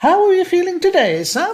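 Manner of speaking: very high, very loud, shrill, patronizing sing-song. Imitating care staff who talk down to old people: silly high-pitched sing-song voice. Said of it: "silly, high-pitched sing-song voice they reserve for old people".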